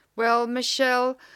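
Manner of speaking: sarcastic, slowed-down delivery. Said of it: "and I'm being sarcastic".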